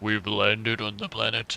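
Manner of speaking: deep-voiced spaceman announcer style. Answering a request to speak like a spaceman: deep spaceman voice. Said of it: "Speak like a spaceman with a deep voice".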